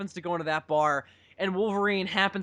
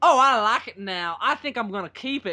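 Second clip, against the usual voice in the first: strange, odd, weird put-on woman's voice; 3 semitones higher, 4 dB louder than usual. Retelling the very end to a listener, act out her words with a weird impression of a woman. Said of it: "my weird impression of her I did".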